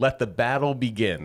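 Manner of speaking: play-acted, ironic, grand, drawn-out sarcastic calling. Retelling a fishing partner's remark across the pond: imitating a sarcastic shout. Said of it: "sarcastically shout from across the pond".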